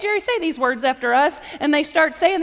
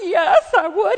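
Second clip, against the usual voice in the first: put-on little-girl voice, like a six-year-old; 4 semitones higher than usual. Retelling Jerry being asked to meet the Indy drivers; imitating Jerry's little-girl voice. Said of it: "His voice starts sounding like a six-year-old girl".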